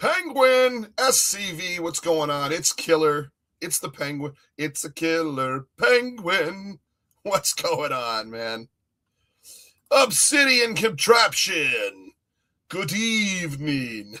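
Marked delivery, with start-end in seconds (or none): 12.7-14.2 classic count-style vampire voice. Greeting a chat viewer by name: Dracula voice. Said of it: "in my Dracula voice".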